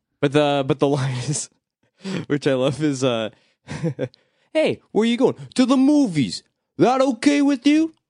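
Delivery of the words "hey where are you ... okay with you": put-on New York accent, much higher. Quoting a line he loves to the others, in a New York accent. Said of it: "It's the New York accent".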